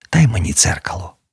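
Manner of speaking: dry-throated broken whisper. A narrator reads an ill woman's request from her bed: cracked whisper. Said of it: "шепотіла вона надтріснутим голосом з пересохлого горла".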